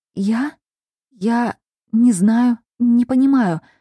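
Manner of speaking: frightened stammering whisper. A girl answers the narrator's questions, in a frightened stammering whisper. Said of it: "испуганно и запинаясь, зашептала девица".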